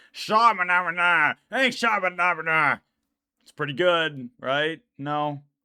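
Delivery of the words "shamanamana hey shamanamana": undead pirate creature character voice. Ending a video for subscribers with a card character bit, Skeletal Pirate impression. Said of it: "Here's my impression of the Skeletal Pirate".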